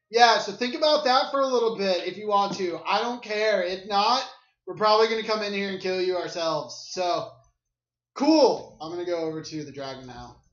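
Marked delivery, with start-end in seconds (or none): 0.2-6.9 put-on loud, high, drunken, raging shouting. Calling into a cave to kobold slaves in character: drunk, raging, loud voice. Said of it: "I'm super drunk right now".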